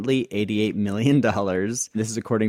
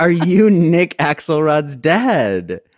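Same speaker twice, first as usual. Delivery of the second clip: slow scream with the word dad drawn out; 8 semitones higher, 9 dB louder than usual. Retelling his dad's story of a stranger pulling over, retelling a stranger's scream. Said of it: "someone pulls over and screams like".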